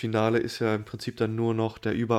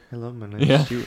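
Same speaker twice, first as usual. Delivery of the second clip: put-on very quiet, hushed speech; 3 dB louder than usual. Retelling how the IT guy first introduces himself, very quiet. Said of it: "halt auch erstmal ganz leise".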